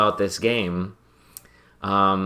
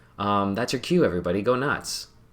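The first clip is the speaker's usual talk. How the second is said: usual speaking voice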